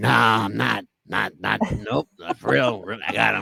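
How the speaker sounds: put-on very low gravelly rasp, older-sounding. Retelling what a young guy who has since passed answered you, in a raspy Jeff the Ref voice. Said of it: "he had a raspy voice".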